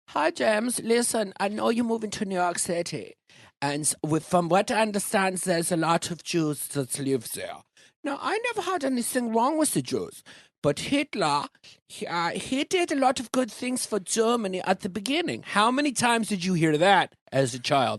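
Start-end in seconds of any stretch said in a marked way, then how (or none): 0.1-15.4 put-on high-pitched old woman voice. Asking if the grandmother talked like this, imitating the grandmother's voice. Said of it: "did she talk like this when she spoke to you?".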